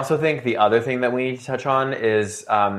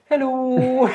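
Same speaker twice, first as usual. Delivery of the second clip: exaggerated put-on Dutch accent, very high pitched; 12 semitones higher than usual. Retelling a friend's greeting on entering places: imitating a friend's put-on Dutch accent. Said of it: "he'd be like".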